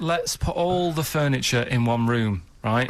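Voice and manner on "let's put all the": ordinary delivery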